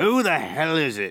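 put-on loud, high, slurring drunken bellow. Reading a story, a drunk calls out from the front room: drunk bellowing. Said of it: "the drunk bellowed".

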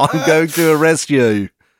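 attempted Australian accent, loud and high-pitched. A speaker tries out an Australian phrase the other suggested, attempting an Australian accent. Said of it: "What's a good Australian thing to say".

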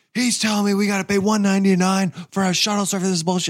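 loud scream. Telling a story about a price, reenacting screaming down the street. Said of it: "I'm like screaming down the street".

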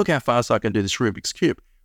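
normal talking voice

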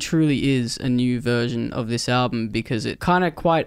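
plain

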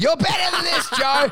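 put-on drunken heckling shout, high-pitched and loud. Retelling how a disappointed drunk friend heckled the show: imitating a drunk friend yelling. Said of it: "he started yelling".

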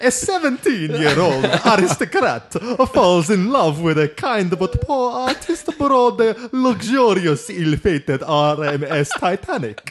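very slow, loud Italian accent. Reading a film synopsis aloud after being asked: Fabrizio's Italian accent. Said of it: "In Fabrizio's Italian accent".

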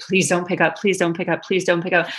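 imitated nervous pleading tone. Retelling making a business phone call: imitating own nervous pleading. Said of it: "I'm so nervous about this all".

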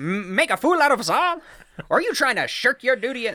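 put-on old-timey nineteen-thirties film-style voice. Redoing a dramatic line as if in the nineteen thirties, 1930s movie-style delivery. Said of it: "now you gotta say it like you're uh, in the nineteen thirties".

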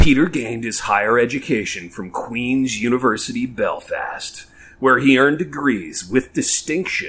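epic, dramatic cinema preview narrator voice. Asked by a co-host, speaker reads a bio aloud in movie preview voice. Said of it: "in movie preview voice".

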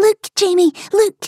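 very high, shrill, excited squealing. Narrator reading a story, a young girl calls out to jamie: excited squeal. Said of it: "she squeals".

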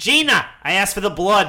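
put-on Boston-accented vampire voice. Playing Boston Dracula in a bit with the others, Boston Dracula voice. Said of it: "of Boston Dracula".

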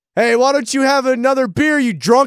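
very high-pitched, loud heckling yell. Pitching a video idea of yelling at people from a car: imitating yelling at strangers. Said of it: "we're yelling shit at people".

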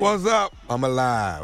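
scratchy, croaky, hoarse, worn speaking voice. Greeting the others on the radio, hoarse voice.

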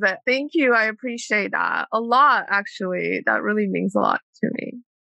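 tearful, swooping voice, crying through the words. Thanking the other person at the end of a one-on-one conversation, crying. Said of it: "I'm like crying".

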